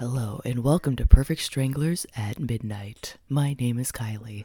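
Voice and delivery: put-on very low, deep, sultry come-hither sexy voice. Host welcoming listeners to the show with morning voices, put-on sexy voice. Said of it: "sexy voices".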